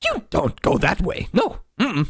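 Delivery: high, swooping, sour-sounding creature voice. Voicing a creature that disapproves of the party's route: sour creature voice. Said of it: "like a sour look, uh, and it, it says".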